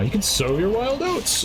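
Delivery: put-on voice, high-pitched, slow and earnest.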